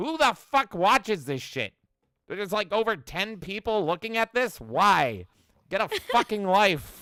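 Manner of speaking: high, very loud outburst. Imagining David Lynch in heaven smoking: David Lynch impression. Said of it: "and be like".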